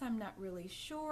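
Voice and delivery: uncertain, unconfident voice. Demonstrating to listeners how someone sounds in an unsure, hesitant voice. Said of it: "if I sound like this".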